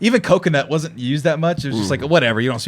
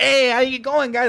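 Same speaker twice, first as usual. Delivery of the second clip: put-on, very high, squeaky East LA accent; 11 semitones higher than usual. A speaker joking about how people from East Los talk, mock East Los accent. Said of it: "I make jokes about East Los".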